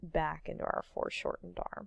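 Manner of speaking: hushed, very quiet, crackling creaky vocal fry. Teaching how to draw a foreshortened arm, in vocal fry. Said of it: "I just vocal fried that out".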